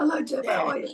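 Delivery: throaty, husky voice, pushed from the throat. Chatting in a group, showing how Gillian Taylforth talks: Gillian Taylforth throaty voice. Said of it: "the- comes from the better throat".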